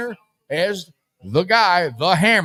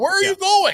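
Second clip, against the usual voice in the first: very high shrieked yell; 13 semitones higher than usual. Retelling watching the game's ending: retelling yelling at the TV. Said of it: "I'm yelling at T V".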